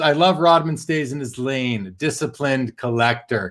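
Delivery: plain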